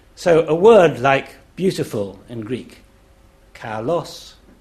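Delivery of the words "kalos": pitch climbs on second syllable of kalos. Explaining Greek pitch, saying kalos with a rise on the second syllable. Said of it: "the voice rises on the second syllable".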